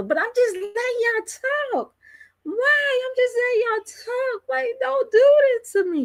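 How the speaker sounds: very high, pleading, begging voice. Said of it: "she pleading and begging".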